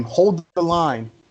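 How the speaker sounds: screaming at full voice, high and loud. A role-play player describes their character's action in the scene: screaming. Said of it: "I scream".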